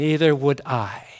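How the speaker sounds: gentle, soft, very deep and quiet voice. Retelling a nurse's reply to a rich woman's disdain, soft voice. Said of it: "with a soft voice replied".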